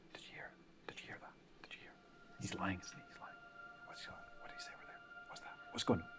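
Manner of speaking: very quiet, hushed, rapid whispering. Describing voices heard while passing an oak in the forest, low-volume whispers. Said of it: "you hear just low volume whispers like".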